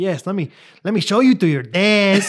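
put-on Mexican accent, slow and unhurried. Retelling a funny scene, the speaker quotes a man's reply in a mexican accent. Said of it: "he starts like talking in a Mexican accent".

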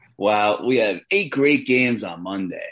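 put-on excitement, plainly sarcastic fake enthusiasm. Previewing the upcoming games to the co-host: sarcastic mock enthusiasm. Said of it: "I'm being a little sarcastic".

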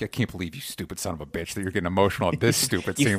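cynical voice. Retelling his thoughts while watching a movie scene: imitating his own cynical side. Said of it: "The cynical side of me was like".

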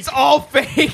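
put-on shouting. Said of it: "I wanted to shout".

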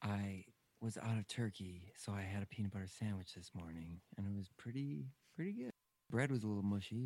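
hushed half-whisper held throughout. Host chatting to listeners between show segments, half-whispering. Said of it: "and I'm whispering".

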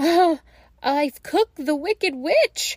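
high-pitched, loud gasped exclamation. A narrator reads the girl answering her brother, gasped. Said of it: "gasped Gretel".

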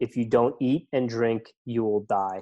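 very thick, heavy put-on Polish accent. Quote a 60-year-old man who had done the Lead Man series, in a very thick Polish accent. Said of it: "in this very thick Polish accent".

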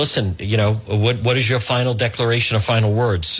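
normal talking voice

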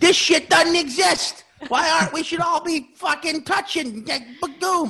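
very high, dopey, dim-witted voice. Imagining how Keith handles covid: imitating Keith as an idiot. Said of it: "I portray Keith as a idiot".

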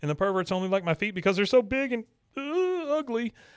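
mock sobbing wail, high and fast.

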